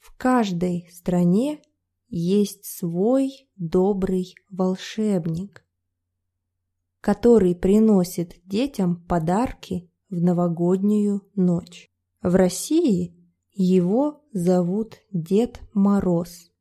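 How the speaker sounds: slowed-down, careful, deliberate reading aloud. Podcast host reading a Russian text aloud after complaints of speed, slow careful reading. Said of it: "today I'm going to read it slower".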